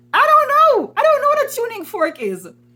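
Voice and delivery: flustered, embarrassed blurt, very high and loud.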